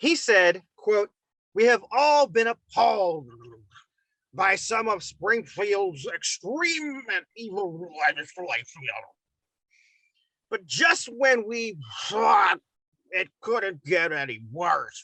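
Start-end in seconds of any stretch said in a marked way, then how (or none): 1.5-15.0 muffled put-on voice, mouth full. Reading a senator's quote aloud: Darren Bailey impression, mouth-full sound. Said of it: "Why do you sound like you have a cock in your mouth?".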